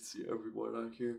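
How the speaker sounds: words spoken through a yawn. Weather presenter going over rain across the states, yawning. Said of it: "Sorry, just yawning".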